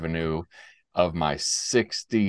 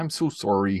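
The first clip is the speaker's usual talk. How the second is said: put-on Canadian accent, done for show. Joking about letting things slide, the speaker apologizes in a put-on canadian voice. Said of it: "pull out my Canadian voice and say".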